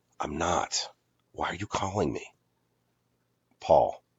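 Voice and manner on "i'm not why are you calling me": whispered under the breath. Reading a script aloud, answering a phone call beside a sleeper: whispering. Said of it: "Amy, whispering".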